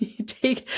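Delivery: laughing while talking. Explaining rest days, then breaking into laughter: laughing while talking. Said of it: "I'm laughing".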